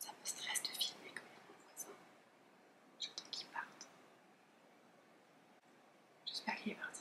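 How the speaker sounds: soft whispering.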